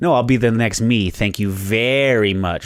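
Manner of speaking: put-on condescending voice. Retelling an actress's reply to a joking compliment: imitating Brie Larson, condescending. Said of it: "super, super condescending".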